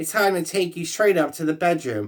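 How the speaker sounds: ordinary delivery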